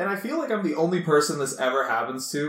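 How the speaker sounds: plain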